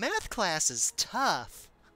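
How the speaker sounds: high, sing-song talking-doll voice. Streamer explaining a reference to an old talking doll recording, Barbie doll voice. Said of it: "that's my Barbie impression apparently".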